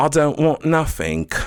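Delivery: fake Cockney accent, very high. Showing the cockney kind of british accent: put-on cockney accent. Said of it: "the Cockney".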